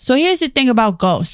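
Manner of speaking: put-on thick New England accent. Imitating a ghost researcher who talks like an uncle: Ed Warren impression with thick accent. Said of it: "he has, like, a thick accent".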